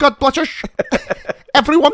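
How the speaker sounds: very high, loud, put-on Dutch accent. Showing an impression to finish: Goldmember voice. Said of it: "a decent Dutch, uh, Gold member".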